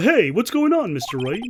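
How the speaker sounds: cartoon cat character voice, video-game style. Voicing a game character greeting Mister Wright: Big the Cat voice. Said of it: "it's more of a Biggie the Cat voice".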